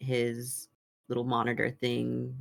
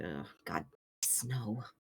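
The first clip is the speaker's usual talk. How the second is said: soft mumble under the breath; 3 semitones lower, 8 dB quieter than usual. A narrator voices a man on the ship as he sees the clouds, mumbled under his breath. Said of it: "mumble under his breath".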